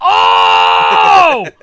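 shocked shout of surprise.

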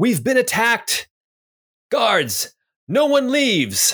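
very high, booming, swooping alarmed yell. Game master voices an unseen voice as the party leaves the courtyard, booming yell. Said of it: "You hear a voice yell out".

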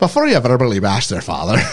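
put-on Irish accent. Repeating another speaker's Irish-sounding movie quote back, Irish-accented Mrs. Doubtfire voice. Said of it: "Enjoy your Guinness".

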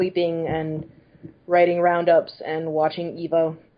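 flat, deadpan, sarcastic voice.

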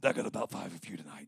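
very soft, hushed put-on preacher's voice, dropped low. Joking after a weak crowd response, doing an impression of Brother Herring. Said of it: "Let me say it in my best impression".

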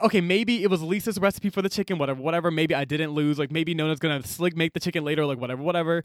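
ordinary talk, nothing marked

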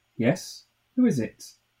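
sharp, high, slow, youngish woman's voice. Reading a story aloud, a woman answering at a chained door: sharp young woman's voice. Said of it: "It was a sharp goloss".

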